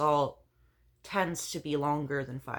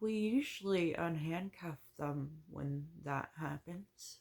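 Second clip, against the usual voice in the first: mock voice full of doubt, skeptical; 2 semitones higher, 8 dB quieter than usual. Retelling what he replied about unhandcuffing: imitating a doubtful voice. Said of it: "you could hear the doubt in his voice".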